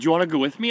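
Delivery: excited, eager, all worked up. Retelling how a friend asked him along on a trip: imitating someone excited. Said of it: "he gets all excited".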